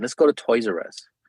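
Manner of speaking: plain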